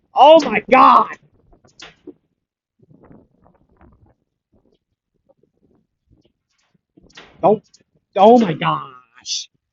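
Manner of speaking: drawn-out, furious angry yell, very high, very loud. Speaker reacting to something that happens constantly, getting angry. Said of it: "I'm sorry for getting angry".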